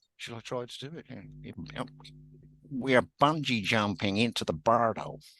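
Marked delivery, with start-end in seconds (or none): 2.7-5.1 put-on very nasal New York accent, much higher pitch. After the other speaker refuses to do an impression, trying it: very nasal New York accent. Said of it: "very nasally sort of New York accent".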